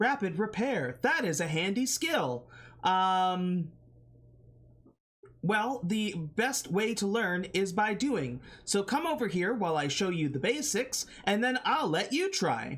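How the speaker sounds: polite, helpful robot voice. Game master voicing a robot shop owner teaching the player a repair skill, robot voice. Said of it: "appears to be a automaton. He's a robot. / Um, but now appears to like be like a like a shop owning robot that uh, / It do- he doesn't differentiate".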